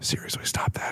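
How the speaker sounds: hushed, very quiet, barely voiced whisper. Retelling a fight, quoting his reply after she mocks his ears, whispering. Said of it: "And he just whispers".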